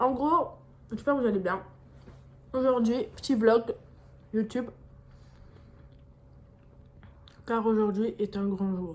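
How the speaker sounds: talking with mouth full. Vlogger greeting viewers while eating, talking with mouth full. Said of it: "je vais parler à la bouche pleine".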